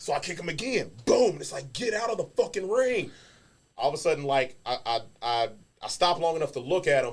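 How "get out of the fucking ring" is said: mock furious, high, angry barking yell. Retelling kicking the intruder again: imitating his own angry yell. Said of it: "So now I'm pissed".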